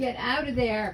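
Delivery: firm and stern but not mean. Speaker breaks off mid-story to give a command, a little stern. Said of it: "Got to be a little stern. Not mean or nasty, a little stern".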